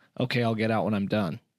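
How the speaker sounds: put-on insolent, dismissive tone. Retelling a student answering the coach in the restroom: imitating an insolent reply. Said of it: "he looks back at him very ignorantly".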